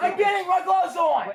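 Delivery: shrill, high-pitched yelled scream. Told to get his gloves on, the speaker answers the other person: screaming. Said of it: "Why are you screaming at me?".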